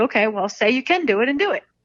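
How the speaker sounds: thick put-on Brooklyn accent. Retelling the father's reply when the speaker said they couldn't do it, heavy brooklyn accent. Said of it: "He has a very heavy accent".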